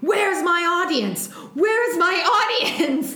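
mock, high, over-the-top hammy shout. Retelling a movie scene, imitating Russell Crowe shouting. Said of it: "then he starts shouting".

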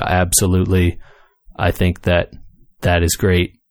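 play-acted flat, slow, expressionless deadpan. Describing answering a question while disguised at a business meeting, deadpan voice. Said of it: "in your deadpan voice".

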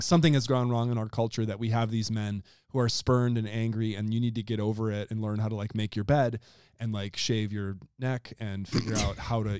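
ordinary delivery

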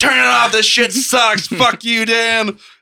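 mock shrieking crowd yelling, very high-pitched. Retelling how everyone yelled at a friend over a show: imitating people screaming. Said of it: "Everyone's screaming at him".

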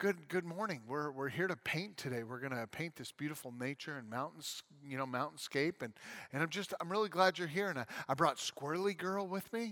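soft, hushed, quiet voice. Retelling how the painter opened each show: Bob Ross impression. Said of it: "and he'd be like".

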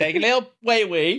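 put-on British accent, high and slow. Performing a line after being asked for a British voice: put-on British voice. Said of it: "do it in a British voice".

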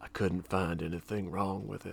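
ominous, low, flat, menacing delivery. Retelling a mechanic's line from a show: imitating a menacing delivery. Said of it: "he says it like it's, like, a menacing secret".

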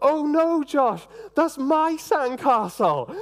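put-on very high-pitched, disappointed, let-down toddler voice. Retelling a toddler's words about a trampled sandcastle: imitating a disappointed toddler.

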